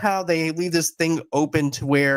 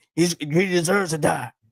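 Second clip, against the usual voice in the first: put-on tough vigilante voice. Retelling a fight scene where one character urges another: Frank impression. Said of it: "It's a good impression".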